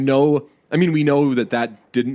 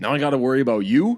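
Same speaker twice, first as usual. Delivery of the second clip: put-on cocky actor voice. Showing a friend an impression of John Hamm's typical movie lines: John Hamm impression. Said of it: "here's my impression of John Hamm".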